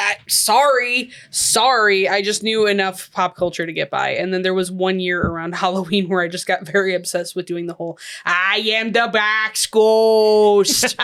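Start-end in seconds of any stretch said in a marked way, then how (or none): 8.2-11.0 put-on very slow, drawn-out Minnesota accent. Recalling a Halloween obsession with a cartoon, doing the Box Ghost Minnesota accent. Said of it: "It's just a Minnesota accent".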